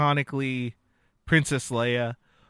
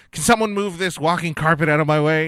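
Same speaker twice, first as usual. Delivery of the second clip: put-on brash adventurer voice, louder; 2 semitones higher, 5 dB louder than usual. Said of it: "she changes into that adventurer".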